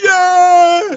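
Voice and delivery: put-on drunk cheering. Retelling a gig where a drunk guy at the bar shouts: imitating a drunk guy cheering. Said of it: "one pissed up guy at the bar going".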